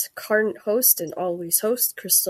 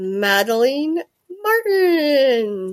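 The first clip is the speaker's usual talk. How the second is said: put-on Scottish accent, name drawn out; 3 semitones higher, 7 dB louder than usual. Host introduces a guest by name, in a put-on Scottish accent. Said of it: "you said it with a Scottish accent".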